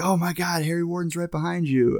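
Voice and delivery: high, panicked, alarmed outburst, acted out. Retelling a movie scene where a character panics: imitating someone freaking out. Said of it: "Tom starts freaking out".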